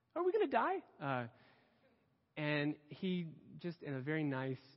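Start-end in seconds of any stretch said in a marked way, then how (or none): 0.2-0.8 acted, very high, small, nervous, timid squeak. Retelling asking a man on a church fishing trip: imitating own timid brave-faced question. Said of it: "just in as much courage as I could muster".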